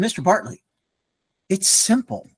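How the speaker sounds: acted cheeky, sassy, know-it-all little kid voice. Retelling a boy's answer in class: imitating a sassy child. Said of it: "he gets a little sassy and he".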